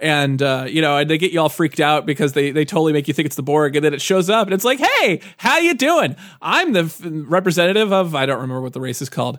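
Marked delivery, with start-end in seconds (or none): 4.8-8.2 friendly, easygoing alien voice, pitched up and slow. Retelling how a game alien greets the player: imitating an affable alien. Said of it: "affable Borg".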